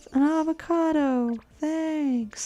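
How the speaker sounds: put-on small child voice. Comparing unwanted apples to a viral clip: imitating the avocado vine kid. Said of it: "Just like that vine with that little kid".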